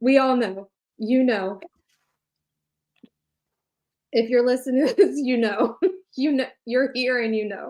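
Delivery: holding back a laugh. Speaking to listeners as the other speaker snickers, holding back laughter. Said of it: "I'm trying not to laugh".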